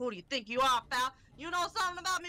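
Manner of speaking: put-on New York accent. Speaker acts out a detective's lines, in a new york accent. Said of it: "Why did he go to a fucking New York accent?".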